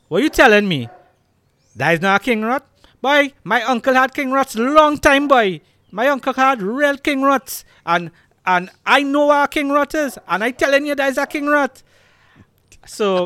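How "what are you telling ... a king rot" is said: put-on Trinidadian accent. Quoting a man's words for podcast viewers, in Trini accent. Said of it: "forgive if I go off with my Trini accent a bit".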